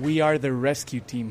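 ordinary delivery

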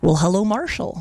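put-on Midwestern American accent. Greeting an American listener who sent in an idea: put-on Wisconsin accent. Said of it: "you've gone for the middle of Wisconsin there".

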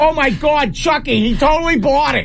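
put-on Boston accent throughout. Imagining the woman at the liquor store calling her manager, the speaker uses a Bostonian accent. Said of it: "with like a Bostonian accent".

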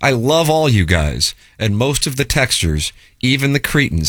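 ordinary talk

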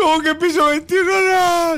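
put-on very high, loud crying wail like a child.

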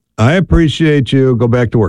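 plain

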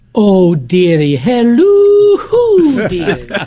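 animated put-on sing-song voice, swooping, drawn-out "hello". Speaker imagines how an owl might sound, Mrs. Doubtfire voice. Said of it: "an owl sounded like Mrs. Doubtfire".

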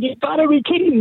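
mock screaming disbelief, very high pitch. Retelling how a man reacted to a call saying he'd won the lottery, retelling a scream. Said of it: "He's screaming".

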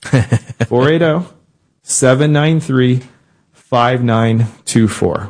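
slow, deliberate, drawn-out readout. Speaker giving listeners the number to call, saying it slow. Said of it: "I'm going to say it slow".

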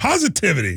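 very excited, enthusiastic, high-pitched burst. Saying a word again after being asked for a very excited way: excited. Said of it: "in a very excited way".

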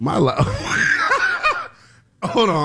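laughing fit, unable to stop cracking up. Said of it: "I'm laughing because".

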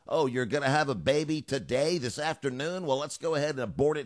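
normal talking voice

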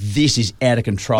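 ordinary talk, nothing marked

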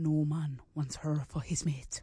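Irish accent, low and soft. Asked to do it again, an actor repeats a Neanderthal line, Irish-sounding accent. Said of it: "why are you sounding like an Irish person".

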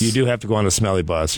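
ordinary delivery

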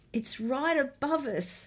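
high, gasped, alarmed voice. Amid deafening noise overhead, a woman flinches and speaks: gasped. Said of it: "she gasped".

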